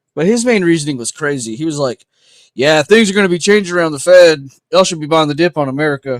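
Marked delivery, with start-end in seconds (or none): 2.6-6.3 put-on Texas-style accent with raised voice. Quoting a man whose reasoning seemed crazy, imitating him in a Texan accent. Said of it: "I don't know why I'm making him sound Texan".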